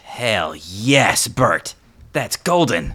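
very loud, very slow, thrilled and delighted. Voicing a character whose face lights up at good news: delighted, excited exclamation. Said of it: "You see Brax's face light up".

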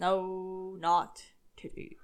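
droll, deadpan delivery. Correcting the other speaker's joke, in a droll voice. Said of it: "with your droll voice".

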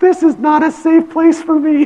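put-on shrill, very high, loud child screaming voice. Retelling a child's tantrum over changing clothes: imitating a child yelling.

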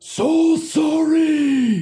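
very high, muted, faint, far-off voice. Voicing a character apologizing from far down the halls: distant, muted, barely heard call. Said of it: "you hear distant, muted, barely heard".

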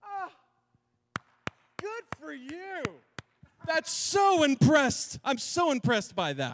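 sing-song sarcastic, fake admiring tone. Quoting a letter's writer mocking those proud of belief: imitating a sarcastic tone. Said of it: "He's being sarcastic here".

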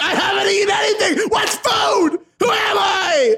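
very high, really loud, panicked yelling. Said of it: "wow, that was really loud".

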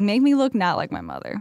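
ordinary talk

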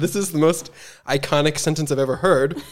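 ordinary talk

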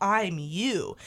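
ordinary delivery

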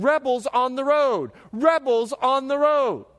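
high, put-on, repeated, alarmed screaming cry. Retelling two women running the opposite direction on the road, retelling women screaming.

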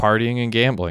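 ordinary delivery, nothing marked

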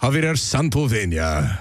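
Spanish-language TV broadcast presenter announcer voice. Saying the other person's name on air, slipping into the Telemundo voice. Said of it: "slip in like the Telemundo voice".

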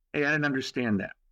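normal talking voice

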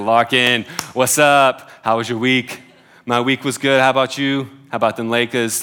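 loud, terrible put-on Brooklyn accent. Quoting a man they see every week, in a terrible Brooklyn accent. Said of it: "that was the Brooklyn accent".

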